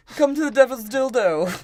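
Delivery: very high, very loud, shrill, blaring pirate-captain voice. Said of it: "make his voice sound like that".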